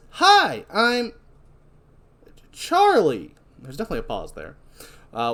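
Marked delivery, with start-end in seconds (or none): 0.2-3.3 toy doll voice. Recapping a horror film scene, voicing the doll's greeting in a Good Guys doll voice. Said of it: "In a good guy voice".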